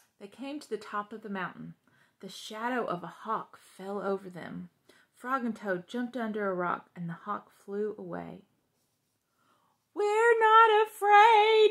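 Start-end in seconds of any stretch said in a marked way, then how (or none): 10.0-11.7 very high, very loud, shrieking yell. After the hawk flies away, Frog and Toad scream together. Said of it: "screamed Frog and Toad at the same time".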